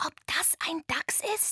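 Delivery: hushed whisper. Narrator reads a companion in the dark as a creature approaches: whispered. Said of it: "flüsterte Antonia".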